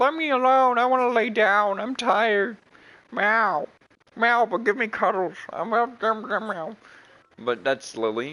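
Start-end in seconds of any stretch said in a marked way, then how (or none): 0.0-6.8 put-on very high, loud, tired old-lady cat voice. Voicing the old cat Lily who wants to be left alone: voicing an old lady cat. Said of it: "Lily's just an old lady, and she's just like".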